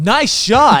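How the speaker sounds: very high-pitched, loud game-announcer voice. Imagining a golf instructor praising each shot, Wii Sports golf instructor voice. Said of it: "your golf instructor in the Wii Sports voice was like".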